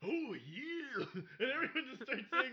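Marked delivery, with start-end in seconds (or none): 0.1-1.1 loud, belted wrestler-style voice. Joking about people who say oh yeah: Macho Man Randy Savage impression. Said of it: "And then Macho Man's like".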